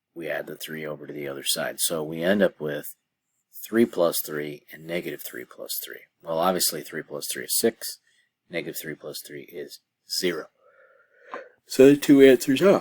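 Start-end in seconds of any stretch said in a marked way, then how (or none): 11.6-12.8 yawned out through words, very high and loud. Working through a math problem for a listener, the speaker yawns mid-sentence. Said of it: "sorry for yawning".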